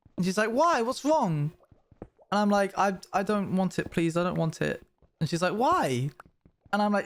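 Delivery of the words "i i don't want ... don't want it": teary, pleading, begging, on the edge of tears. Retelling being handed a gift at about ten, imitating teary past self. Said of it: "getting a bit teary".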